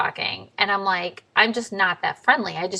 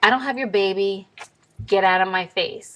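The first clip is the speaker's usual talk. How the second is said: mock-angry, pissed-off tone. Retelling answering a man who demanded his baby back, acting out an angry retort. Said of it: "I'm pissed".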